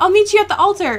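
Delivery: mock, giddy excitement, very high and loud. Recapping a favorite scene where Edward gets all giddy, giddy Edward impression. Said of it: "when Edward gets all giddy".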